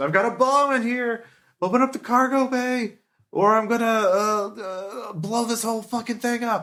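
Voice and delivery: shrill, very high, yelled, threatening shout. Voicing an enemy on the ship threatening the players: enemy yelling a threat. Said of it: "the third guy yells out on the ships".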